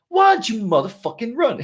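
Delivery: high-pitched, forceful, hard-hitting delivery. Imitating a motivator for a run: Samuel L. Jackson voice. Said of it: "Samuel L. Jackson, if you see".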